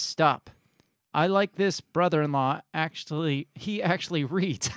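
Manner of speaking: normal talking voice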